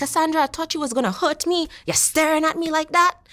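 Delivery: put-on Trinidadian accent. Retelling what her mother from Trinidad said to her, imitating mom's Trinidadian accent. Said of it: "I do a horrible impersonation of my mother. She's from Trinidad".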